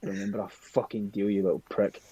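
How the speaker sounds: muttered under breath. Playing a character watching someone disappear, muttered under breath. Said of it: "just kind of like under my breath going".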